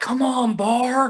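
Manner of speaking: loud yelling, pitched very high. Retelling how a partner yells at her during play: imitating Brandon yelling. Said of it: "yelling at her".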